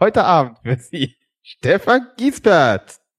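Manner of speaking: drawn-out TV announcer voice. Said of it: "wie so ein Ansager".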